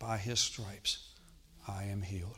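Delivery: soft, very slow, methodical words under the breath. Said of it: "under my breath, I just started to speak".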